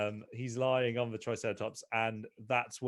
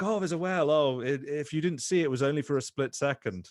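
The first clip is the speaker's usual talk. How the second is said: put-on Icelandic accent with broken English; 4 semitones higher, 4 dB louder than usual. Retelling what a whale watching ship announcer said: broken English Icelandic accent. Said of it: "I love the, the Icelandic accent".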